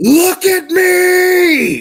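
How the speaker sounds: very loud, very high scream, "me" drawn out. Game master voicing a man who grabs a player's character by the throat, screaming. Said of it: "and he screams".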